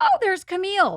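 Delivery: bright, cheerful, upbeat voice, high-pitched.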